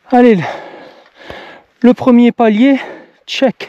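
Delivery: winded, breathless, slow and high-pitched. Speaker checking off the first landing of a climb, out of breath. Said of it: "Je suis essoufflé".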